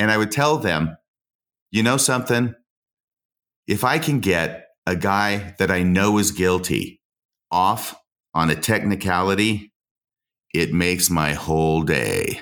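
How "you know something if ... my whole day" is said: slow, deliberate, play-acted menacing and sinister tone. Defense lawyer retelling what he told people astonished by his job: retelling a sinister remark. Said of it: "The way you said that was so sinister".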